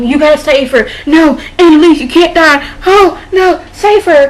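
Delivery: put-on, high, loud, frantic, desperate pleading. Retelling a TV scene where Frank begs doctors: imitating someone flipping out. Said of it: "Frank is there flipping out like".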